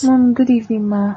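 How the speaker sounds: downcast, sad, low-spirited voice. In a drama, a daughter greets her mother on a phone call, sounding down. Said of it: "Your voice seems kind of down".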